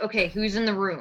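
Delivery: ordinary delivery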